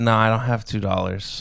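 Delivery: ordinary talk, nothing marked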